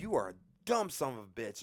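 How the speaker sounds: angry, pissed-off shout, high and swooping. Retelling yelling at him while sitting in the truck, retelling an angry yell. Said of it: "I'm yelling at him. Like, I'm pissed".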